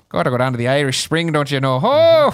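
teasing delivery in a mock Irish accent. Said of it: "Wait for [name] to say something about his shillelagh".

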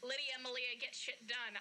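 ordinary delivery

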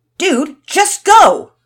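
piercing, shrill, very loud high-pitched yell. Reading a story, one character yells at another: yelled. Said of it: "Todd yelled at Finn".

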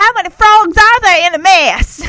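put-on mock Southern accent. Quoting a man's question from a clip: put-on southern accent. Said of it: "Ricky puts on this southern accent".

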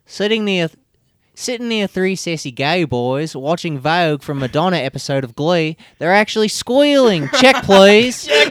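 New Zealand accent. Asked by a podcast co-host to read a tweet aloud, New Zealand voice. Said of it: "read this tweet in your New Zealand voice".

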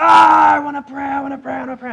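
put-on very high, shrill, raspy toddler shout, repeated. Retelling two kids fighting over saying grace, imitating Zoe shouting. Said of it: "shouts the loudest".

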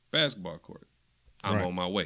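ordinary delivery

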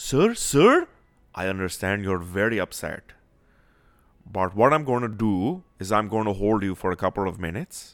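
put-on Indian accent. Acting out a conversation he is listening to, imitated Indian accent. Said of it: "he's got an Indian accent, so I'm going to throw it out there".

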